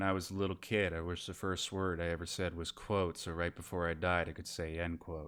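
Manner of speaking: play-acted bone-dry, low, flat deadpan. Telling one of his jokes the way he would, imitating his low deadpan delivery. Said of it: "low tone, deadpan delivery ... I'll try to deliver it like he would".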